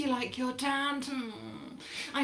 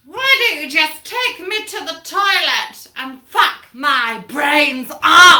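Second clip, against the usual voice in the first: bellowed, very loud top-of-the-lungs yell; 2 semitones higher, 16 dB louder than usual. Retelling a drunk wife on a full train: imitating a wife shouting loudly. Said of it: "the wife shouts out at the top of her lungs".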